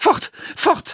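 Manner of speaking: recoiling, horrified outcry. A mother, approached by her son Jakob, crying out in horror. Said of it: "rief sie".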